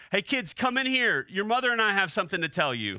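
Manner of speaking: yelling out loud. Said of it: "he yells".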